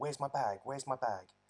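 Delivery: acted frantic, alarmed, panicked outburst, repeated. Retelling her realizing in the pub that her bag is missing: imitating someone panicking. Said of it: "and she's panicking".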